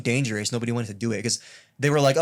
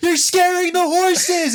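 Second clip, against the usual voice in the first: put-on panicked outburst, higher and louder; 7 dB louder than usual. Retelling a movie scene with soldiers shooting: imitating someone freaking out. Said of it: "he's, like, freaking out".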